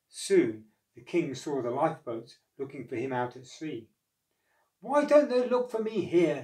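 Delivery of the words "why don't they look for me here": exasperated, high, loud crying out. Narrator reads a stranded king watching the lifeboats search at sea, crying out. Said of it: "he cried".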